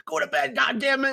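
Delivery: put-on furious mom, very high-pitched, raspy, scolding. Retelling his mom bursting in at night: imitating his pissed-off mom. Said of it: "she'd get fucking pissed off at me".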